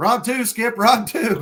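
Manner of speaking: high, loud hollering. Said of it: "we all hollering at him".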